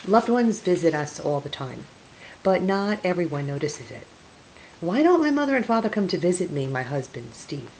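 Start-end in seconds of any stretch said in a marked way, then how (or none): 4.8-6.7 aggrieved, hard-done-by tone, high and rushed. The narrator's husband speaks up to her, complaining.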